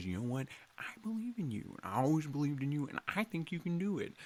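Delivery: soft, hushed, confiding half-whisper, barely audible. Showing a favorite impression, the softer half-whispery Owen Wilson voice. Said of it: "the other version of Owen Wilson".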